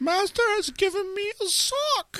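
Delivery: tiny, very high-pitched, small character voice. Comparing himself to a Harry Potter character who hurts himself: Dobby voice.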